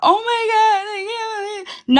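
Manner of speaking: very high-pitched, put-on, fake sobbing. Denying crying earlier, acting out what that would sound like: mock crying. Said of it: "that's not me crying like".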